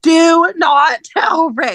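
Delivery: put-on, shouted, high-pitched yell. Recapping a TV show, reenacting their own yell at the TV. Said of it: "I was literally yelling at my TV".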